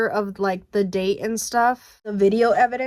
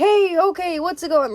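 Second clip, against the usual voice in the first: booming, really loud, high big-guy voice; 8 semitones higher, 3 dB louder than usual. Retelling how a big manager greeted the speaker at work; really loud voice. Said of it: "Like a really loud voice".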